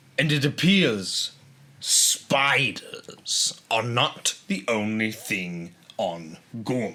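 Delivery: put-on villain voice. Quoting a line as Krennic, doing an impression: Krennic impression. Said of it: "You're really good at impressions".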